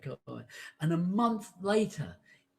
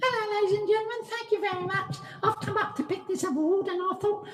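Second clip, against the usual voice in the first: squeaky voice pitched very high; 3 dB louder than usual. Imagining the actor picking up an Academy Award on stage: squeaky Daniel Craig impression. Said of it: "that's Squeaky Bond".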